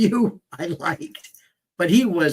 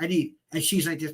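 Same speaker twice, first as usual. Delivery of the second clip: usual speaking voice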